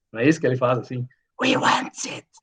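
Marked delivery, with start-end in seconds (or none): 1.4-2.2 put-on fantasy cave creature voice. Showing Luiz how Gollum talks in the film, in Gollum voice. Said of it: "Ele faz essa voz de".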